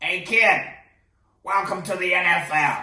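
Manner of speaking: put-on deliberate, loud, slow New Jersey accent. Retelling a phone call from Coach Tom Hill: imitating his New Jersey accent. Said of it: "I swear that's exactly how the, the, the, the man speaks".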